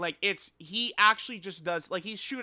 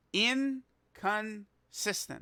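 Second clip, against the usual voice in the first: very slow, every syllable stretched out; 3 semitones higher, 3 dB quieter than usual. Speaker spelling out the key word for listeners, said very slowly. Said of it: "I'm gonna say this real slow".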